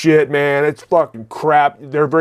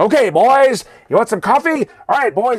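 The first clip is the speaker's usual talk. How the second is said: put-on 1940s old-movie street voice, higher; 7 semitones higher than usual. Retelling how an old cafe owner kept talking: imitating a 1940s movie street talker. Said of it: "reminding me of some motherfucker from nineteen forties talking on the street".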